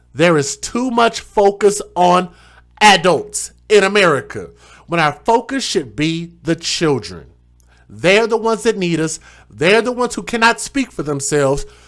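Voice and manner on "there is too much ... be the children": very slow, deliberate, word-by-word delivery. Repeating a point for listeners who missed it, said really slowly. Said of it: "I need to say that really slow".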